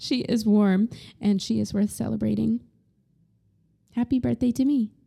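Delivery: tearful voice, crying while talking. Reading a birthday letter to herself aloud, crying while talking. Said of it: "Oh my God, I'm crying".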